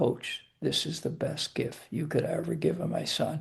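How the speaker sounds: whispered words. Coach retelling what a player's mother whispered in his ear, whisper. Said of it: "she whispers in my ear".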